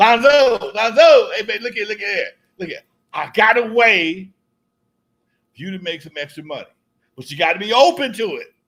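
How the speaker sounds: overly hearty coaxing tone. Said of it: "he's real laid back".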